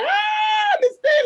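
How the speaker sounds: put-on children screaming, loud and high-pitched.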